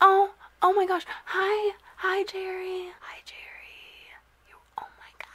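hushed whisper. Showing viewers a new pet, jerry, in its home; whispering. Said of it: "I don't know why I'm whispering".

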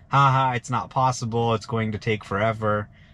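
plain

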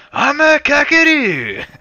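shrill, swooping, very loud, high-pitched shout. Yelling a silly line at an enemy as asked: yelling really loud. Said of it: "Really loud in his ear".

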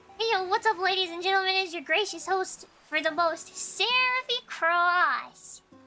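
loud excited announcer voice. As the host greeting ladies and gentlemen, a loud, excited voice. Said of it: "Loud, excited voice".

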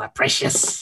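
whispered, lurking creature voice. In a chat, the speaker does their best Gollum impression. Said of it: "do my best Gollum impression".

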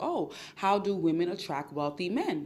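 ordinary delivery

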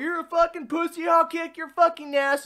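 put-on top-of-the-lungs, very high, shrill screaming. Recounting what a man screamed during a scuffle, retelling a scream. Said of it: "screaming at the top of his lungs".

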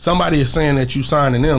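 normal talking voice

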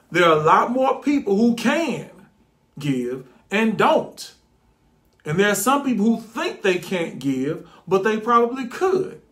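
measured, unhurried, slowed-down, deliberate delivery. After saying it too fast, the speaker repeats the point, slowed down. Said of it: "Let me slow down".

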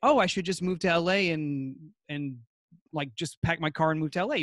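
usual speaking voice

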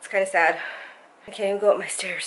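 out of breath. Vlogger who just came up the stairs, out of breath. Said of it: "Let me catch my breath".

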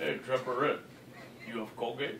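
hushed, breathy, whispered voice. Doing a colleague's voice after another speaker says do it: imitating a colleague's voice. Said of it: "my colleague Colgate voice".

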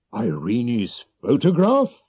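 startled exclamation of disbelief, surprised cry. The king responds to Mr. Holmes's request: surprised cry. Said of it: "he cried".

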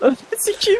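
very high, frightened, startled scream.

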